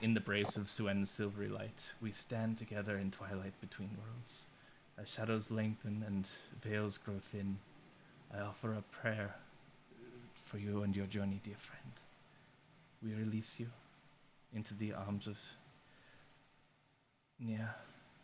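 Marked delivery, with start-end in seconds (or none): 1.1-17.7 hushed, quiet, half-whispered delivery. Narrating a scene where he strokes the closest Drow's brow: half-whispering a prayer. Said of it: "and just whispers like".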